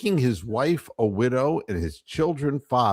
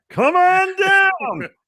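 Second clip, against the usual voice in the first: put-on game show announcer voice, higher and louder; 7 dB louder than usual. Imagining Dwayne Stat as The Price is Right announcer: imitating Dwayne Stat as game show announcer. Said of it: "it would sound something like this".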